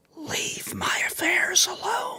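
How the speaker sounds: soft, hushed whisper. Game narrator voicing a powerful unseen presence to the players: whispering. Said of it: "you hear it whisper".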